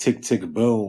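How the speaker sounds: laid-back, chill, relaxed hip hop delivery. Showing own way of saying a phrase: chill, relaxed hip hop delivery. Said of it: "I say it in a more of a chill, relaxed way".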